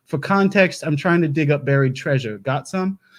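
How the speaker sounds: ordinary delivery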